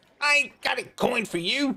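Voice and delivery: put-on very high little boy dwarf voice. Voicing a kid dwarf refusing a coin: kid dwarf boy voice. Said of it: "he says".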